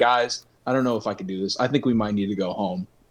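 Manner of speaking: mock dead serious, flat deadpan, no irony. Retelling a friend asking to go home from camping: imitating deadpan delivery. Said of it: "just deadpan again".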